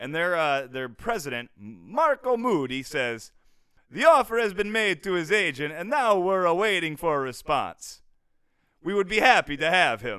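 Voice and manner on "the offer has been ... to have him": loud, booming, vampire-like voice. Quoting a league president's statement about an offer, in a Dracula voice. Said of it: "He sounded like a bit like Dracula there".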